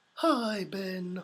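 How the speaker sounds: put-on storybook honey-bear voice. A viewer asks for a hi to Ben in Winnie the Pooh voice. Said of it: "in a Winnie the Pooh voice".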